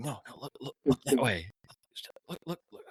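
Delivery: hushed stage whisper. Retelling how Larry crawled up taking photos: imitating someone whispering. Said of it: "And he's whispering".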